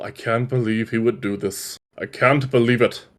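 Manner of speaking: slow, soft mutter, mumbled under the breath. A character looking over the ring, muttering to himself. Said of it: "just kind of mutters to himself".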